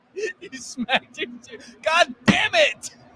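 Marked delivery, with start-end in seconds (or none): 1.8-2.8 mock angry, furious, high-pitched shouting outburst. Imitating the person he's talking to at a red light: mock-furious shout. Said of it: "you and you're real pissed off".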